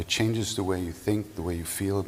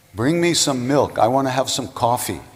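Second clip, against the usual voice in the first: very loud, high-pitched shouted yell; 6 semitones higher, 10 dB louder than usual. Retelling the Baba yelling to his devotees on the roof: retelling a loud yell. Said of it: "in a really loud voice, he yells".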